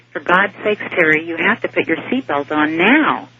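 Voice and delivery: ordinary delivery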